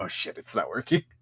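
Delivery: hushed whisper, muttered under the breath. Narrating a creature's reaction during a game, muttering under its breath. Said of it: "it kind of mutters under its breath".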